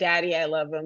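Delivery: ordinary talk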